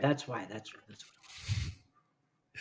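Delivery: fading voice.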